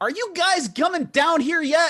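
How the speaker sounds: very high-pitched, loud gnome voice. Game master voices a gnome calling up from below: very high-pitched gnome voice. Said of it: "The very high-pitched voice of a gnome".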